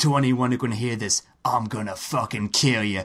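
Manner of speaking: put-on sinister, menacing, threatening villain voice. Retelling a side-quest character's threat to anyone who can hear, mock-menacing. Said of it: "it gets increasingly menacing".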